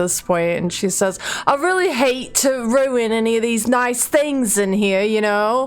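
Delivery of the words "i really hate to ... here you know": put-on petulant, sulking child voice. A character, frustrated after listening to everyone talk, finally speaks up: petulant child. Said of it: "kind of turning into this like petulant child".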